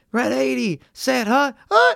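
very high, slow, rising falsetto, belted out. Retelling a quarterback's hike call at the line: Kirk Cousins falsetto hike call. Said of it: "it's a falsetto".

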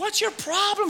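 mock yell pitched way up, very high, shrill. Retelling how a young woman in a car yelled at another driver: imitating a woman yelling. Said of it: "she begins to yell".

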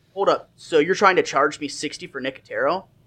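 ordinary talk, nothing marked

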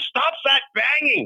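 put-on German accent, yelled high. Retelling an old neighbor yelling at him to stop banging: Missus Brown's German accent, yelling. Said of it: "she had this German accent".

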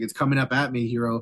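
ordinary delivery

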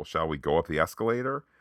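normal talking voice

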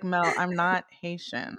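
ordinary talk

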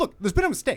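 squeaky, high-pitched voice. Recalling a film scene where he's sent into battle, squeaky Tom Cruise voice. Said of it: "that squeaky voice like".

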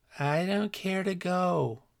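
weak, faint, shrill little voice, slow. The tailor answers the blacksmith's question in his faint, shrill voice. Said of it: "returned the tailor in his faint, shrill voice".

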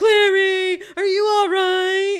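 very loud, high, bad action-hero tough-guy holler. Doing a Stallone voice for a character when asked: Stallone voice. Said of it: "Can you do a Stallone voice?".

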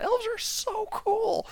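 put-on very high, drawn-out, thrilled excited yell. Retelling how someone yelled out in the movie theater, retelling an excited yell. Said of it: "just yells out".

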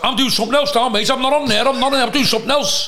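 put-on high shouting. Retelling a post office worker's outburst, imitating him shouting. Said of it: "Shouting as though he was in".

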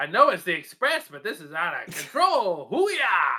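mock old-fashioned comedic voice. Speaker riffs about an express bus, doing a Jackie Gleason impression. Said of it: "I was trying to be like an old-timey comic".

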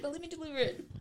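quiet, soft, high, apologetic tone.

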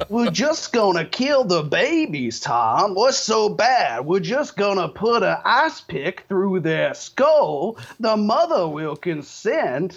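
fake Southern accent, laid on thick. Recalling a first broadcast appearance and the host's bit: Alex Jones's fake Southern accent. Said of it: "doing a fake plantation owner Southern accent".

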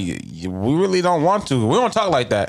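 normal talking voice

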